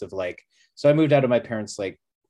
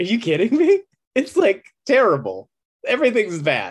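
mock unhinged, manic half-laughing, very high; 12 semitones higher, 6 dB louder than usual. Retelling own answer to the girl behind the counter: retelling laughing maniacally. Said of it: "laughing kind of maniacally and being like".

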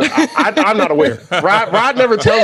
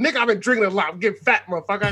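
heated, annoyed, acted angry griping; 6 dB quieter than usual. Retelling a text a guy sent him, reading it mock-angry. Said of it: "I did not say it that angry".

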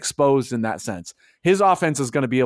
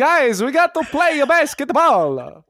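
put-on Italian accent, higher pitch; 12 semitones higher, 4 dB louder than usual. Imitating how a player talks: Danilo Gallinari impression. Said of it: "he talks like that".

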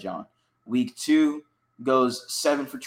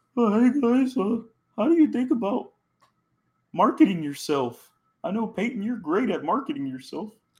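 small, pitched-up little puppet voice; 8 semitones higher than usual. Retelling Will Levis asking Peyton and Eli Manning a question, Kermit the Frog voice. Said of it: "A little Kermit the Frog voice there".

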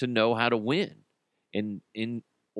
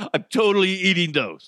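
put-on high, loud giggling child voice, laughing throughout; 7 semitones higher, 5 dB louder than usual. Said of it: "he started giggling".

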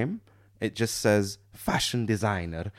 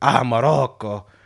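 put-on Italian accent; 3 semitones higher, 6 dB louder than usual. Retelling what an italian man said on meeting, comically stereotypical italian accent. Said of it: "comically stereotypical accent".

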